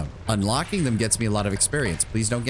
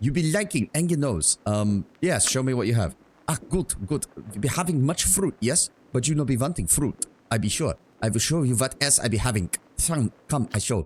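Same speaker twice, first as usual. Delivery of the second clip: badly mangled, put-on German accent; 2 semitones higher than usual. Playing a fruit merchant showing his goods, worst german accent. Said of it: "the most worst frickin' German accent".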